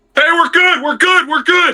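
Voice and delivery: very high, pitched-way-up calling voice. Recalling a favorite moment of the quarterback making checks at the line: imitating Philip Rivers at the line. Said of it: "watching him Monday Night Football".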